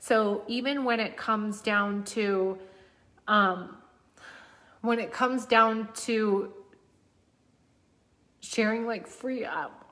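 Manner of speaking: crying mid-sentence, tearful, cracking voice. Guiding listeners, the speaker starts crying without knowing why. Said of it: "I don't know why I'm crying".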